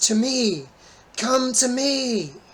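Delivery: very high, booming, drawn-out loud shout. Game master voices a distant call heard only by Halcyon: booming voice. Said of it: "the voice booms out across the landscape".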